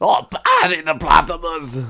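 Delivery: awful put-on voice, high, booming, slow and swooping. Trying an impression another speaker asked for: Doctor Doofenshmirtz voice. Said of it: "Do you wanna try and do an impression?".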